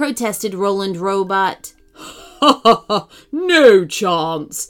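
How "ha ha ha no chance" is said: loud, slow, evil, villainous tittering giggle. An evil octopus answers a racer who begs to be let go, giggling. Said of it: "giggled the evil octopus".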